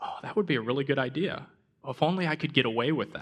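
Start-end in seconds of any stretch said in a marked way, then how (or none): none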